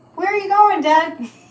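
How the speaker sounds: put-on high, loud, childlike little kid voice. Recalling asking their dad, as a small child, where he was going; little kid voice. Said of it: "That's my little kid voice".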